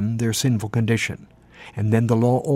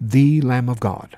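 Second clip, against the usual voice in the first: the word "the" hit hard and emphasized; 3 dB louder than usual. Showing how emphasis changes a phrase's meaning: stress on the. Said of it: "If you emphasize the word "the" there".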